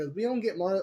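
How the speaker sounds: ordinary delivery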